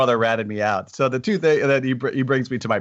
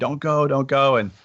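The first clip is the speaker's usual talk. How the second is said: put-on drawn-out screaming; 3 semitones higher than usual. Retelling how a brother screamed at a three-year-old not to go: imitating someone screaming. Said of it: "He started screaming at me".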